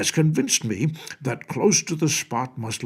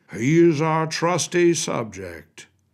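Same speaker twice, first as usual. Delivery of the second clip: dignified, measured, slow, stately, pitched-up voice; 6 semitones higher, 4 dB louder than usual. Reading the king's words in a story aloud: slow and stately voice. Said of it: "in a slow and stately voice".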